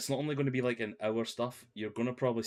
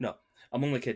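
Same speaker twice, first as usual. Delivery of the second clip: ordinary delivery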